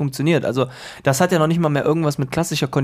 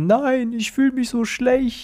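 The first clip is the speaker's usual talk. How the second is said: acted crying, very high pitched, slow and drawn out; 10 semitones higher than usual. Retelling how a man pretended to cry, imitating someone crying. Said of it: "fing dann an zu weinen und sagte".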